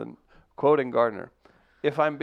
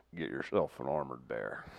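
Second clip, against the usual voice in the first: very low, very soft, hushed rumble; 12 semitones lower, 13 dB quieter than usual. During a group discussion, doing a Sam Elliott impression. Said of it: "I'll do my best Sam Elliott".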